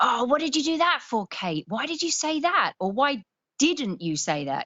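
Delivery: self-critical, critical tone. Speaker illustrates how people talk to themselves after a situation, critical self-talk voice. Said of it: "talking to yourself in a critical voice".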